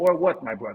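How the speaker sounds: put-on speaking with Slovenian accent. Imagining a star player answering his coach: Slovenian accent. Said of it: "in his best Slovenian voice".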